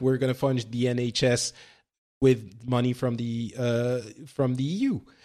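normal talking voice

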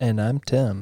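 smooth public-radio host announcer voice. A podcast co-host introduces themself at the show's open, in an NPR voice. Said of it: "I'm still doing my NPR voice".

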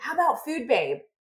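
put-on, light, mild calling out. Speaker retells a man calling out a name idea from the other room: retelling a yell. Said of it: "he yells back from the other room".

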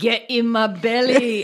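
bad Scottish accent, slow and drawn out. Retelling how Billy quotes Fat Bastard while grilling: bad Fat Bastard Scottish accent. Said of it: "tries to quote him with a bad accent".

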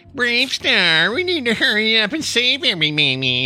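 annoying, very high, swooping cartoon sidekick voice. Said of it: "He just has that kind of voice".

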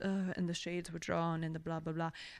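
bad film-noir narrator voice. Explaining a fake podcast idea, the speaker does a terrible noir narrator impression. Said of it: "That's a terrible noir impression".

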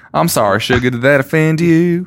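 put-on sweet-talking Southern country accent. Reading about a man described as country, the speaker does a put-on country accent. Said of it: "because he's country, I decided I was going to do an accent".

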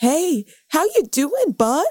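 earnest loving host voice. Retelling a video where Steve speaks to camera: imitating Steve, earnest and loving. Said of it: "in a very, like, earnest and, like, loving way".

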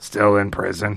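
dead-level, very low, flat droning monotone. Imagining how a man still in prison talks, flat monotone Sling Blade voice. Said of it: "he just talks in just monotone".

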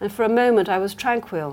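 ordinary delivery

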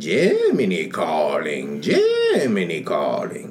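failed put-on British accent. Imitating an Irish man trying his best at a British accent, bad British accent. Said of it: "he can't do no British accent. But he tried his best".

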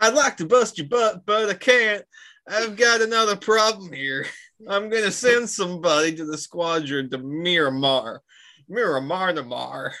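put-on thick Southern accent. Reading Stinger's lines aloud, the Southern accent getting deeper. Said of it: "weird Southern accent you do".

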